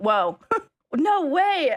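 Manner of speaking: mock shocked, fake-surprised voice. Mocking the chat after telling them they can pretend to be shocked: mock shock. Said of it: "you guys can pretend you're shocked".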